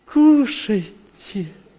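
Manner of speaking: mock loving, caring, high voice. Retelling a moment when someone offered food and invited the other to eat, imitating her loving manner. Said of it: "она такая с любовью".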